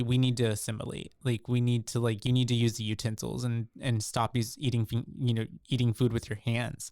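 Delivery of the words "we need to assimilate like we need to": ordinary delivery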